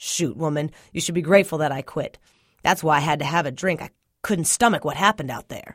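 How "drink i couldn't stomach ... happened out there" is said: ordinary delivery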